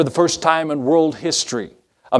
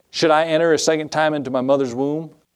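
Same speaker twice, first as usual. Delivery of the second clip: ordinary talk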